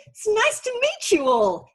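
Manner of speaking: put-on very high, overly bright, swooping cheery chirp. After babbling at a lectern, waving to the room, reenacting a cheery greeting. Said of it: "In that tone of voice".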